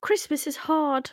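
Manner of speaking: giggly, high voice, laughing through the words. Imitating a British comedian, high soft Geordie voice and giggly: giggly Sarah Millican impression. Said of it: "she'd be kinda giggly and kinda like".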